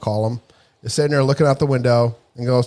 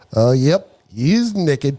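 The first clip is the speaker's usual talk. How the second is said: put-on young female voice with Kentucky accent. Retelling a young observer's remark over the headset, in a Kentucky woman's voice. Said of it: "this female Kentucky voice go".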